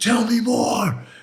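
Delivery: put-on furious, very high, angry yelling. Recounting how he once shouted at him in his face, retelling an angry yell. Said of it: "I got real angry and I yelled at him".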